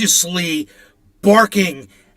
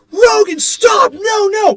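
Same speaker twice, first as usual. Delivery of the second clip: mock very high, very slow screaming shout; 14 semitones higher, 3 dB louder than usual. Retelling screaming at Rogan as a bear swipes, retelling a scream. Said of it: "And I'm screaming".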